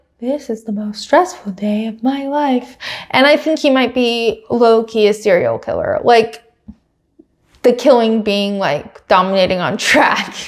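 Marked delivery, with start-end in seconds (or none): 0.2-2.8 put-on calm tone, quieter. Repeat what he said about the most stressful day of his life, imitating someone speaking so calmly. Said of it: "But he said it so calmly".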